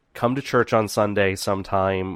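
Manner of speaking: normal talking voice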